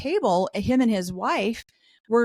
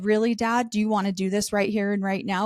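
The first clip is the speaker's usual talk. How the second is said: put-on calm tone; 2 semitones lower than usual. Speaker retells addressing their dad at a funeral, retelling calm words. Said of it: "I calmly put my hand".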